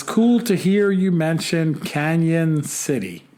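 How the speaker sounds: ordinary delivery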